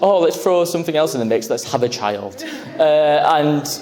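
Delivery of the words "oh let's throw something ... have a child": ordinary talk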